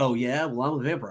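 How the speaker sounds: ordinary delivery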